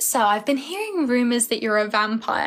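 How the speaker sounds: usual speaking voice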